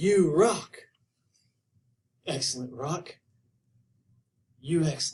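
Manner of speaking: laid-back, chill surfer dude drawl. Showing how to say a listener's memory trick, in Spicoli surfer dude voice. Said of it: "you have to say it in kind of surfer dude style".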